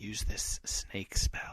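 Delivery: put-on whispering voice. Picturing Snape coaching a duelist from the corner: imitating Snape whispering. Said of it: "he's, like, whispering".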